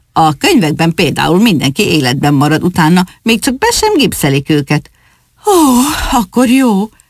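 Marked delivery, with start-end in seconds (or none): 5.5-6.9 mildly relieved, slightly raised voice. Reading a story, a character hears the blow won't be so bad: somewhat relieved. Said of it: "könnyebbült meg némiképp Marcipán".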